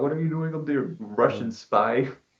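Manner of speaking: put-on, toned-down, accusing police-style holler. Retelling how the police yelled at a man up a telephone pole: imitating police screaming. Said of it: "screaming at him".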